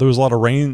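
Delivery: ordinary delivery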